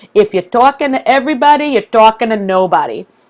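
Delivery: funny put-on New York accent. Quoting something Marie Forleo once said, Marie Forleo funny New York accent. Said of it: "in a funny New York accent".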